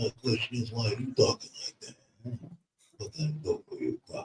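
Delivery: breathy mob-boss mumble, muffled as through cotton. Retelling a movie scene where a father answers his son: Godfather voice. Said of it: "he did the Godfather voice".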